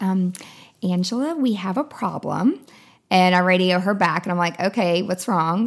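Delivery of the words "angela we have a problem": small, sweet-toned little voice. Retelling a wedding ceremony, the speaker imitates the intern radioing her: sweet little voice. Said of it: "with her sweet little voice".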